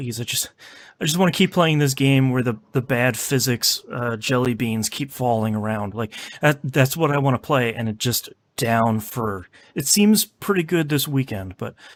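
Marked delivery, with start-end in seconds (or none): none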